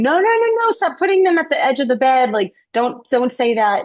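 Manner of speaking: put-on high, screaming child voice, protesting tone. Retelling screaming as a child while an aunt prayed for angels: imitating own childhood screaming.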